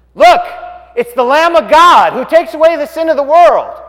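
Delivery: high, loud hollering out. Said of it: "he hollers out".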